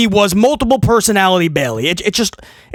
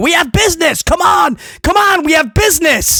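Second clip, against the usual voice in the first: mock pushy, insistent, high, demanding screaming; 8 semitones higher than usual. Complaining about how Bayley is booked, imitating Bayley screaming.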